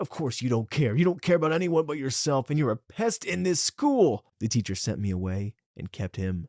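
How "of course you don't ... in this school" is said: loud, high, furious scream, patience gone. Retelling screaming back at a classmate in front of the teacher: imitating own past screaming. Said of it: "I screamed back".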